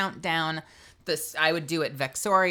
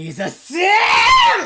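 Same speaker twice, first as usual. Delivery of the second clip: very loud, swooping, long, drawn-out howled scream; 12 dB louder than usual. Asked how they would do it, screaming on stream. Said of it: "we're gonna scream on stream real quick".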